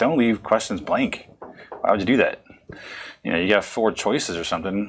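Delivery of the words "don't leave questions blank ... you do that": normal talking voice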